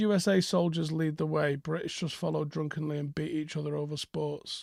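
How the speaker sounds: ordinary delivery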